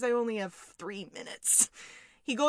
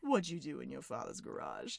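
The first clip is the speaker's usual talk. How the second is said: play-acted, very quiet, very low, hushed, sinister creepy voice; 9 semitones lower, 12 dB quieter than usual. Retelling a questioner asking Lisa on the stand again: mock-creepy question. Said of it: "He says it so creepily".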